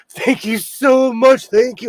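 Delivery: very loud, high, near-tearful voice. Retelling their reply to a vendor not seen in a long time, near-tearful thanks. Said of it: "I almost cried in her face".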